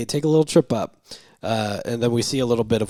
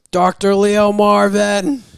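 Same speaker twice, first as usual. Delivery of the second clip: very loud, very high-pitched yell; 10 semitones higher, 8 dB louder than usual. Retelling how a man steps off the bus, imitating him shouting. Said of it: "He's literally just shouting in the middle of town".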